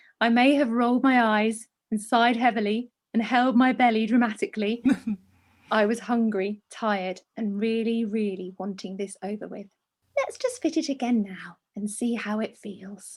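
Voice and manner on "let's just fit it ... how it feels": play-acted calm, gentle, soothing, patronising voice. Retelling what a lady said during a fitting, mimicking a soothing, patronising voice. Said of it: "soothing, patronising voice".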